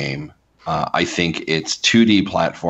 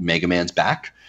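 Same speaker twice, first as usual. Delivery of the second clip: ordinary delivery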